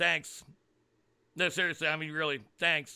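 sarcastic, mock-grateful tone. Thanking those blamed for ruining schools: sarcastic thanks. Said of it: "A lot of sarcasm intended".

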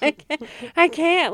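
laughing on verge of tears. Reacting to another speaker's sad stories: laughing on the verge of tears. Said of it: "I'm gonna cry".

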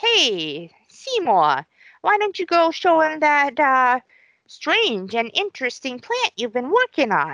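sing-song put-on voice, stretched "hey" with swinging pitch. Retelling the plot, voicing the woman from the florist shop: Audrey vocal impression. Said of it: "great vocal impression".

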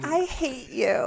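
sugary cute delivery. Repeating that you hate the other speaker: said cutely. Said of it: "That was so cute".

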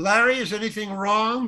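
called out high. Retelling a story, quoting the director: retelling the director's yell. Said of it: "the director yells".

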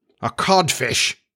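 blank, empty delivery. A narrator reads the captain echoing another voice's answer, blankly. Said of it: "Hook echoed blankly".

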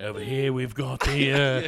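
put-on nature documentary narrator voice. Joking about a National Geographic kind of night: David Attenborough voice.

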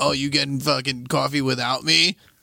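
put-on sarcastic tone. Speaker imitates how someone they know reacts, imitating his sarcasm. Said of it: "He does the sarcastic".

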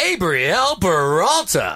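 showy put-on announcer-style voice. Reading out a list of names in an announcer voice. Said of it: "Can I read it in an announcer voice?".

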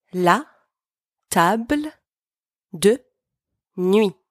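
la table de nuit said slowly, word by word, syllabified.

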